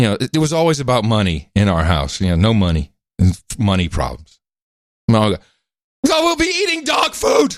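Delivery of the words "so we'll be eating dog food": very high-pitched, ominous shouted voice.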